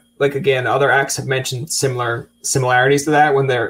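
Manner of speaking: ordinary talk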